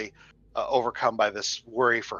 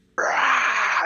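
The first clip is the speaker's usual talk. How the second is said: sudden sharp ghostly shriek on rah. Voicing a ghostly woman turning on the party: screaming at the top of her lungs. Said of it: "just screams at the top of her lungs again".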